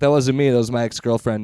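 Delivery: ordinary talk, nothing marked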